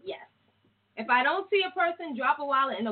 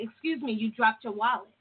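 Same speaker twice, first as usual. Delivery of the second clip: ordinary delivery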